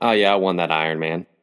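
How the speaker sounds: ordinary delivery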